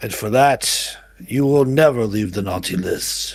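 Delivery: shaky, trembling voice, quavering throughout. Game narrator voicing a voice from the arena's center, booming, shaky voice. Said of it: "you hear a booming voice, albeit rather shakingly".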